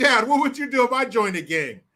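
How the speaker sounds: said through a chuckle, laughing and playful. Retelling asking a father what he'd do if he joined a gang: reenacting a smiling, laughing question. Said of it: "smiling and laughing when I say it".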